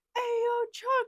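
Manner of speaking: acted, very high, loud hailing shout. Retelling calling out to someone revving a truck: retelling own loud shout. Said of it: "really loud".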